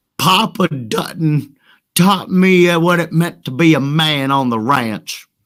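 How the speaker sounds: put-on twangy rural country accent. Joking as a ranch hand about being raised right: twangy country accent. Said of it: "the accent that I just did".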